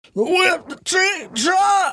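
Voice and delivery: tight, strained voice pushed from the gut. Showing how to say the whip the trick truck: tight, gut-clenched voice. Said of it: "you gotta say it with like your gut all like tight".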